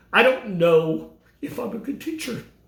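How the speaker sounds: words coming through tears, crying. Speaking about not knowing whether one was a good teacher, crying while speaking. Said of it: "I was just crying when I said it".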